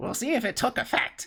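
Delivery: very high little birdlike piping voice. Storyteller voicing a character in the scene, now in a bird voice. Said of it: "I suppose he has more of a bird voice now".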